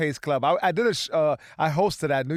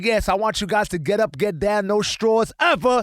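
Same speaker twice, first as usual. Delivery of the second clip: imitated voice, higher pitch; 4 semitones higher, 3 dB louder than usual. Retelling what a guy from Queens said at the show: imitating a guy from Queens. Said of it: "And he was talking like that".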